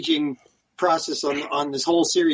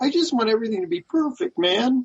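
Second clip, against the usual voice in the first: put-on crying, much higher pitch; 7 semitones higher than usual. Right after telling John to stop crying, imitating someone crying. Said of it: "Stop crying".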